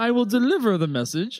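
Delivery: very loud, high grand royal voice. Agreeing in character to deliver a message, wearing glasses: regal voice. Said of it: "I'm talking very regal now".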